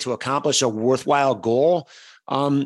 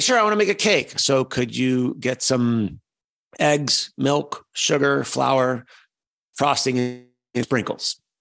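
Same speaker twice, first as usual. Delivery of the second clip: slow, plain, matter-of-fact listing delivery. Speaker demonstrates answering someone's offer to pick up groceries; shopping list voice. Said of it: "It's a shopping list voice".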